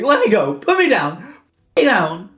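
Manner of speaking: very high, loud, swooping shrieks. Voicing a leggy captive that is picked up and flails: screaming. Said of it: "He starts screaming and flailing".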